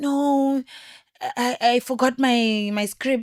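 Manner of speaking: tearful, crying, very slow halting stammer. Retelling what a girl who came out crying said: imitating someone crying. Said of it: "this other girl came out crying".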